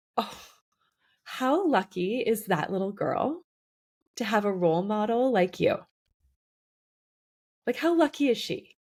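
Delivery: tearful, choked-up voice, close to crying. Praising a guest as a role model for a little girl, speaker gets teary. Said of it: "I'm still getting teary".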